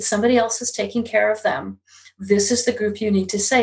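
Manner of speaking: ordinary delivery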